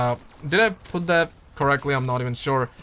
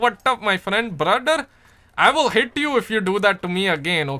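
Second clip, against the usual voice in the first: put-on Pakistani Indian accent, higher; 5 semitones higher than usual. Chatting with other gamers about accents, showing off a Pakistani Indian accent. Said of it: "I I love that accent".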